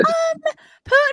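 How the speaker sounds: high squeaky mock voice. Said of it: "listen to his voice".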